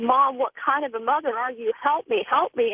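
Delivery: ordinary delivery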